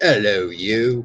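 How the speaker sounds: imitated British accent. Echoing a greeting just called British: imitating Dave's British greeting. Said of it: "That's so British, Dave".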